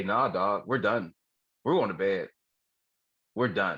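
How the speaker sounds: ordinary talk, nothing marked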